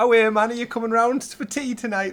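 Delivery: put-on northeastern-sounding accent. Describing video game characters, the speaker mimics them in a Northeast England accent. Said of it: "they're so northeast area".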